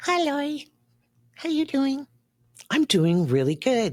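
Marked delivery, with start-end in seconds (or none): 0.0-2.1 put-on very high, childlike little monster puppet voice. Host pretends Elmo is visiting to read a comment, greeting the host in Elmo voice. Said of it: "hello, Elmo".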